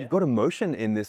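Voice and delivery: plain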